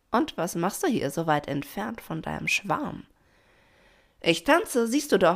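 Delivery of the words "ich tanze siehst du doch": called out, higher pitch and louder. Narrator reads one character's reply to another who taunts her, calling out. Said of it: "rief Pina".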